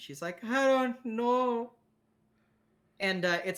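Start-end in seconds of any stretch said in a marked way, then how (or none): 0.4-1.7 full, high crying, words through sobs. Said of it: "she's full crying at this point".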